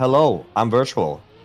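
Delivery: put-on Norwegian-accented English, gently sing-song. Introducing a streamer caught live, Virtual impression, Norwegian accent. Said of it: "Was that a good Norwegian accent?".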